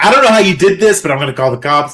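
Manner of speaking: mock angry, furious screaming. Retelling a man threatening to call the cops: imitating someone screaming. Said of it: "And he's screaming".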